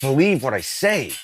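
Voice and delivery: intense, passionate, fully engaged delivery. Speaker showing a listener how talking sounds when really into it. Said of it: "I'm really into it".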